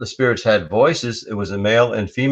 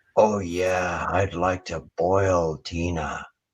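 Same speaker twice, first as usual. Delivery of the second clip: soft, hissing, sibilant male voice; 4 semitones lower, 6 dB quieter than usual. Retelling what a male voice said on a recording, in a sibilant male voice. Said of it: "a sibilant voice says".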